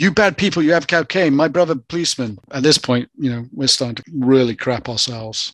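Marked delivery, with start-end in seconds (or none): 0.0-2.4 worked-up, agitated outburst with raised pitch. Retelling what the brother said while accusing them: imitating an agitated accusation. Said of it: "They're starting to get pretty agitated".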